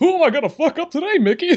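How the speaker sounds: very high-pitched cartoon character voice. Acting out Goofy walking in as the muscle: Goofy voice. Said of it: "Fucking Goofy comes walking in like".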